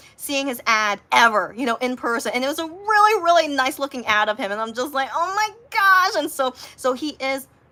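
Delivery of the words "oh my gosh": play-acted thrilled little gasp, pitched up. Retelling first seeing an ad in an airport: imitating own excited reaction. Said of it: "I was so excited".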